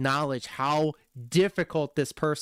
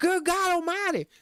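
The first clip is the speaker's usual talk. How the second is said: bad Southern accent, very high pitched. Mocking how a Canadian thinks a Southern boy talks: mock Canadian's Jim Ross impression. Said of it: "a Canadian thinks a good old Southern boy talks".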